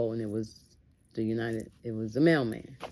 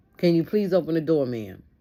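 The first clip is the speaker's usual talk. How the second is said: loud, commanding, authoritative voice; 4 semitones higher, 6 dB louder than usual. Retelling a person at the door asking her to open: imitating an authoritative voice. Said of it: "such a authoritative voice that it scared me".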